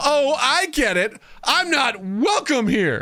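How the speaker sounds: very high, drawn-out, fake dramatic whine. Retelling the mother-in-law's reply in the kitchen: imitating a fake drama tone. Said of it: "Imagine this in fake drama tone".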